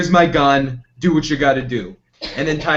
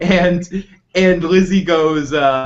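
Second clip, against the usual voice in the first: ordinary talk, nothing marked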